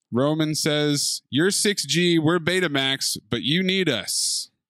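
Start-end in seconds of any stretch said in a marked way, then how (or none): none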